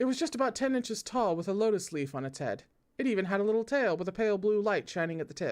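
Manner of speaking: ordinary delivery, nothing marked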